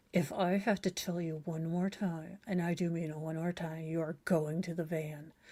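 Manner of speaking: hushed, menacing ventriloquist voice. A parent in public who can't use the loud mad voice: mock ventriloquist soul-destroying voice. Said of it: "that ventriloquist, um, you know, soul destroying voice".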